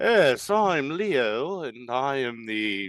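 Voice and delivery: put-on uptight elven voice. Voicing the absent player's elven ranger Leo, as asked: uptight Leo voice. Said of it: "It's like uptight".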